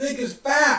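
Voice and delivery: high, loud, offended woman's voice.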